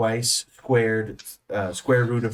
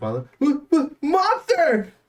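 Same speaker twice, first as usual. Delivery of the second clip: very high, stuttering, stammering cry of terror. Narrator voicing Rosie as she flings an arm toward the dugout, terrified stammering shout. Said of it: "she stammers".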